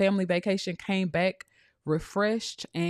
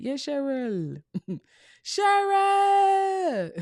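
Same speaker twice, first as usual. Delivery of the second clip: very high, sing-song put-on Jamaican accent; 9 semitones higher, 3 dB louder than usual. Addressing the chat, the speaker tries out a practiced jamaican accent. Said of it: "I've been working on my um my Jamaican accent".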